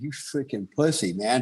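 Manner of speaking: put-on crying, sobbing voice. Retelling standing alone in the woods, yelling at himself: retelling own crying words. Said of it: "self crying, going".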